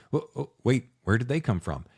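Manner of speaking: normal talking voice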